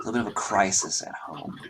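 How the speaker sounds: whispering in character. Voicing a noble sister telling a stranger about trouble: whispering in character. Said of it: "this she does drop to a sort of whisper".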